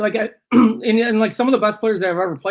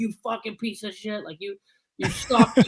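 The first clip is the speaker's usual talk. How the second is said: put-on yelling voice, higher pitched; 4 semitones higher, 5 dB quieter than usual. Retelling how Keenan insulted a player after a period: imitating Keenan yelling. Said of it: "he would be yelling at guys".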